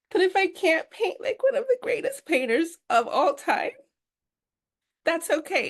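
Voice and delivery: crying through the words. Speaking about the stress they had been feeling, crying. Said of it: "And I know it's dumb that I'm crying".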